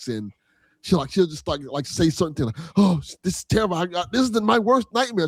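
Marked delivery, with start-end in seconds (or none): 2.8-5.3 put-on terrified, shivering, scared mumbling. Describing how a game character acts, imitating Grace's terrified mumbling. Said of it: "mumbling, like, like, s-, terrified, like, shivering".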